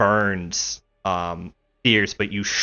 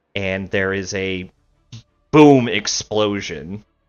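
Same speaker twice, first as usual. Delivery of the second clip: plain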